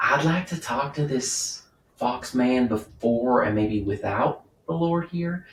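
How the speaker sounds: whispering. Speaking in character to two companions so the Lord won't hear: whispering. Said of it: "I'll whisper it".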